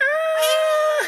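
shrill, very high, loud, drawn-out scream. Retelling a movie character's attack: imitating a scream. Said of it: "she screams like".

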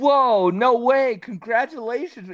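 put-on earnest happiness. Retelling how he answered the pregnancy news, mock really happy and serious. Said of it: "He got like really happy and serious".

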